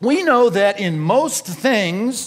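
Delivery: slow, heavy stress on most.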